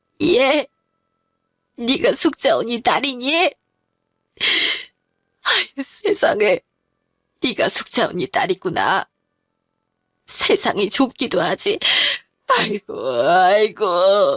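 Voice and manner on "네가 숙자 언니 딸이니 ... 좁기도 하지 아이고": weeping while speaking, tearful crying. A mother learns the young woman is Suk-ja unni's daughter, crying. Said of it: "그만 울어요".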